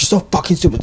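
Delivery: mock angry swearing voice. Retelling a fall with blood gushing, imitating Leoni cussing out. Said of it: "Leoni was cussing me out".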